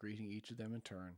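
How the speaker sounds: plain reading voice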